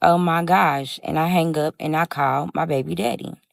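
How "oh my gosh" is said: put-on panicked, freaked-out voice. Retelling seeing the feds surround a friend's house: retelling own panicked reaction. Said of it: "I'm freaking out".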